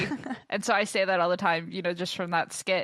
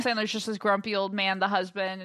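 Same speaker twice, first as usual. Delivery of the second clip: ordinary talk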